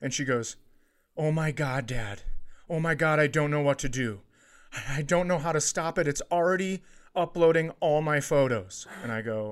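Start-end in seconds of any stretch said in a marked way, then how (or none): 1.2-8.9 play-acted, frightened, at-a-loss panicked outburst. A father retelling what his panicked daughter told him, imitating her panic. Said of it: "she's so panicked".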